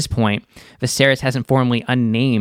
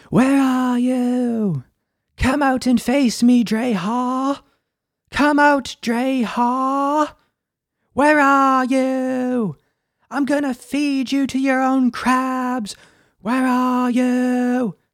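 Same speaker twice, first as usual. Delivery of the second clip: high scream, every "you" stretched out; 13 semitones higher than usual. Quoting a character's only lines in the episode, imitating Matt Smith's high-pitched scream. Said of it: "he has such a high-pitched voice, like, when he screams".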